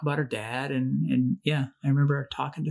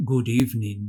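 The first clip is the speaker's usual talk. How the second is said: put-on chilling, smooth voice, pitched lower; 4 semitones lower than usual. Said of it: "That's his voice that I'm doing an impersonation of".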